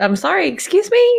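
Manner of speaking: high-pitched, indignant mock outrage. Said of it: "I would be doing this".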